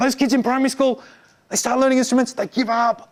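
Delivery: confiding whisper. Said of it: "'cause we're whispering".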